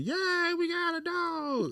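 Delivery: very high, very slow, drawn-out cheering scream. Retelling how everybody reacted at the puppy store: imitating people screaming. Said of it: "Everybody was screaming".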